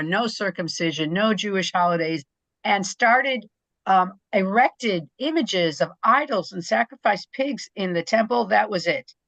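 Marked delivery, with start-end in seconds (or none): none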